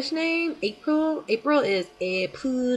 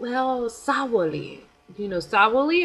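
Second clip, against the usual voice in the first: halting, choppy broken non-native English. Retelling how the principal spoke English: imitating the principal's broken English. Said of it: "in his broken English".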